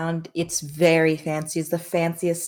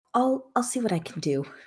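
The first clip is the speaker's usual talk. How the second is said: whispering in put-on voice, higher; 5 semitones higher than usual. Voicing a mother answering her daughter's request: whispering back in character. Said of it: "she whispers back".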